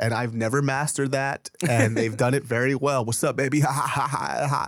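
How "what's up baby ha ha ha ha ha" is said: flirty delivery capped with a giggle. Imitating how certain guys giggle after a line: imitating guys' flirty giggle. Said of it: "certain guys like giggling after".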